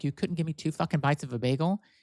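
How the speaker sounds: play-acted indignant, annoyed, pissed-off tone. Retelling own words to a partner about a bagel: retelling own angry words. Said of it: "I was pissed off".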